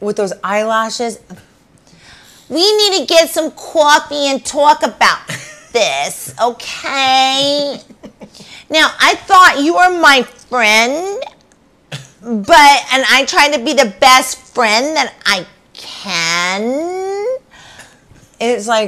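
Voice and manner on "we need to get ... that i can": sneering, mocking, high, loud girly voice, "can" drawn out. Imitating Gina's voice when asked to do the hi: mocking impression of Gina's voice. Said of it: "Do the hi".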